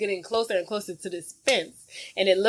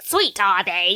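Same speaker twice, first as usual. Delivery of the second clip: witchy voice; 4 dB louder than usual. Retelling a movie scene, Miss Trunchbull questioning a girl: witchy Miss Trunchbull voice. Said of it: "Sounds like a witch".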